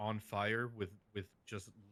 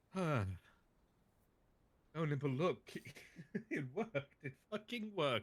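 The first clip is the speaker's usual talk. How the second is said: crazed manic laughter while talking, much higher; 6 semitones higher than usual. Crowing that it worked while on fire, laughing like a crazy man. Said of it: "you're laughing like a crazy man".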